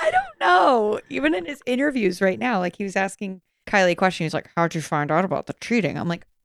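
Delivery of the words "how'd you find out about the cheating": mumbling as if mouth full of marbles. Imitating Nick asking Kylie a question in an interview: Nick impression with marbles in mouth. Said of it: "just the marbles in his mouth".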